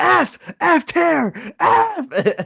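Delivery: very high, very slow, drawn-out scream. Retelling listening to the tier list episode: imitating own screaming. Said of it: "I was screaming".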